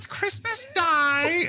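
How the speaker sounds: very high, slow, hammy put-on voice. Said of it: "I'm sure I had the shittiest".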